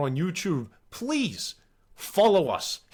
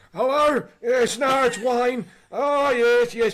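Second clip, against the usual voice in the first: put-on high, very slow, decrepit old-man voice; 6 semitones higher, 5 dB louder than usual. Retelling phoning a pub for booze delivery, pretending to be a decrepit elderly man. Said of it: "I used to put on the most decrepit voice".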